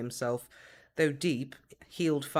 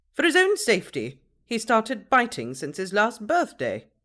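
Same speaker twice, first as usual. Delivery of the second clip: very loud, high-pitched, clipped, nasal voice; 8 semitones higher, 9 dB louder than usual. Reading the matron's reply to the man, clipped nasal voice. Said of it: "in her clipped nasal voice".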